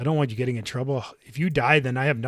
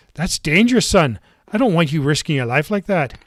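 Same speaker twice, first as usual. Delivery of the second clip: put-on loud Irish accent; 4 semitones higher, 8 dB louder than usual. Playing a parent warning a son about danger, in an Irish accent. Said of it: "Why am I talking with an Irish accent?".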